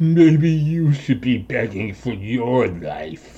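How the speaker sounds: slow, monstrous creature voice. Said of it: "the thing laughs and goes".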